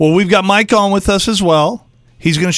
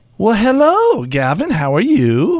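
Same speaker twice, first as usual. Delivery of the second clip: put-on swooping, sing-song, toddler-style baby talk; 2 semitones higher than usual. Asked whether she uses a toddler voice with him, the speaker demonstrates a toddler voice. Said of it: "do you ever talk to him in like that toddler voice?".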